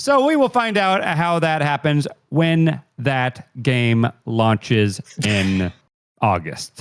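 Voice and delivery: drawn-out, slow, mechanical robot-like announcer reading. Imitating how a colleague transitions between news topics: imitating a robotic news delivery. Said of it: "he'll be like".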